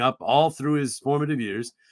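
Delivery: ordinary talk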